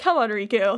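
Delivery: put-on heroic voice with sighing. Retelling a scene as Sora, who is sighing: imitating sighing Sora.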